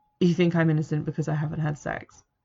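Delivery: plain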